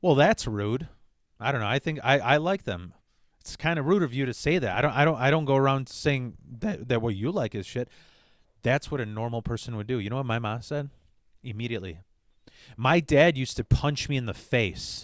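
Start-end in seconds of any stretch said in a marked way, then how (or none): none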